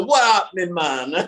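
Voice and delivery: put-on Jamaican-accented speech. Retelling a friend's greeting in a put-on Jamaican accent: imitating Sean Majumder's Jamaican accent. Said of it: "jumped into this, like, Jamaican accent".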